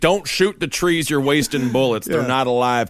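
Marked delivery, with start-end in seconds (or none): none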